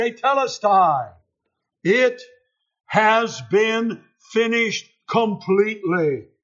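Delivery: crying out loudly in full voice. Preaching on redemption, retelling the word he cries out, retelling a loud cry. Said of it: "he cries in a loud voice".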